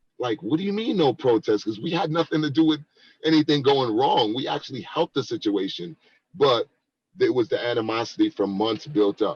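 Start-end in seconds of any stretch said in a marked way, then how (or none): 0.4-1.7 puzzled, confused, caught-off-guard tone. Retelling what was said when told to stop the protest: retelling own confused question. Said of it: "I was so confused".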